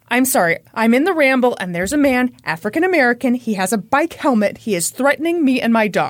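ordinary talk

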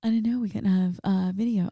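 soft half-whisper under the breath. Retelling what Shauna kept half-whispering during a show: imitating Shauna half-whispering. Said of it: "Shauna keeps whispering to me. She's like".

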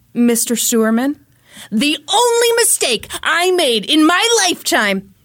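put-on fired-up New York voice. Retelling a witness's cross-examination outburst: imitating Jerry raising his voice. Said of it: "He raised his voice".

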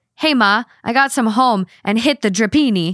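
fake Italian accent with invented words. Quoting what he said over dessert: imitating a made-up Italian accent. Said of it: "he speaks in made-up Italian".

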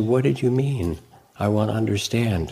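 open, caring, curious tone. Showing how a question sounds when truly listening: caring tone. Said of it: "there's a caring in it".

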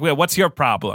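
put-on Italian-accented mobster voice. Describing an actor's film roles, imitating an italian mobster. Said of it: "a Italian mobster who's like".

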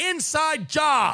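sudden, high, blurted scream. Retelling what was screamed out in history class: imitating himself screaming. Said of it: "the first thing I screamed out in the class".

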